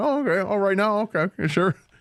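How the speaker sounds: high voice, mouth full. Retelling a guest agreeing to join the halftime show: imitating Gary Danielson chewing an apple. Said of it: "chewing an apple".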